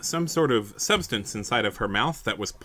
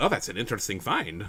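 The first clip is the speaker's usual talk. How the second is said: heavily laid-on fake Spanish accent; 3 semitones lower, 3 dB quieter than usual. Telling a group what someone said about a wiki find: put-on Spanish accent. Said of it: "this uh, Spanish accent gets offensive".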